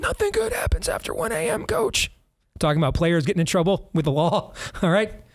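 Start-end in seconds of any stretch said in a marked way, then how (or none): 0.0-2.1 rough, raspy voice pitched very high. Recalling an old saying someone used to repeat, raspy Johnny Orr voice. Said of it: "in a raspy voice".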